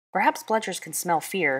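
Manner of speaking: plain reading voice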